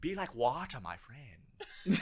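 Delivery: very slow, deliberate, each word drawn out. Quoting a martial arts video: Bruce Lee voice. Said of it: "watching some Bruce Lee videos. He's like".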